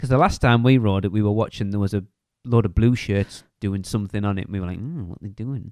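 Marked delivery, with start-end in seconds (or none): 4.8-5.7 very quiet, eerie, creepy small voice. Retelling their reaction to blue shirts on a ride, in a creepy little voice. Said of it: "That creepy little voice".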